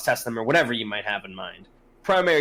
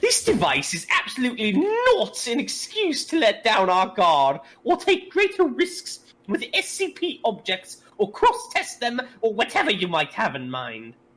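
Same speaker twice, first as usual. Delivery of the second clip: very high, swooping, patronizing put-on condescending voice; 10 semitones higher than usual. Voicing a character's message about SCP objects, in a condescending voice. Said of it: "The voice is a big part of it".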